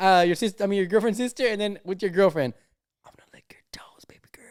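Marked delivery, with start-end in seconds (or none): 3.0-4.4 very quiet, breathy, barely audible whisper. Acting out whispering to the girlfriend on a call: imitating a whisper. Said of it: "Because he starts whispering".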